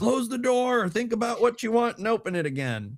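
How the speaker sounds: put-on very high grandpa voice, lecturing tone. Retelling what grandpa said about the open refrigerator: imitating grandpa's tone. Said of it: "in that, like, tonality".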